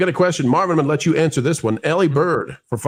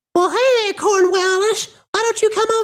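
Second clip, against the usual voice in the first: very high cartoon falsetto, pushed right up. Testing whether pitching up hits the falsetto, trying a Mr. Hankey voice. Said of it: "still a little too low".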